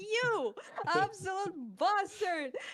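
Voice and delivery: high, slow, loud mock outraged yell.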